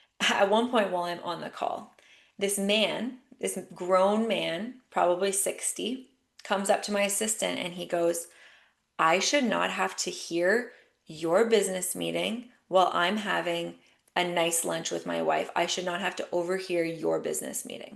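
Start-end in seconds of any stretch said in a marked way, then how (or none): 9.0-18.0 hostile, combative, aggressive, indignant tone. Retelling what a sixty-ish man said to the speaker's assistant, mock-aggressive retelling. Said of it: "he says this in a very aggressive way".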